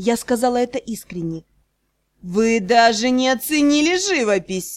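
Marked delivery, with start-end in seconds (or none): 2.2-4.8 teasing, needling, wry ironic reproach. A lord answers her blunt no and keeps on, ironic. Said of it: "продолжал иронизировать лорд".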